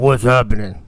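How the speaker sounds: put-on very deep voice. Showing how a friend says the line: Twin Screw voice. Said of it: "this really deep voice like this".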